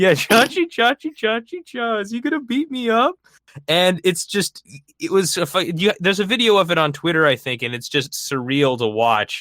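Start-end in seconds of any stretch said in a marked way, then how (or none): 0.1-3.2 put-on mocking crying voice, higher pitched. Retelling how Alex Jones taunted Marco Rubio: Alex Jones mock crying voice. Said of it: "a crying, mocking voice".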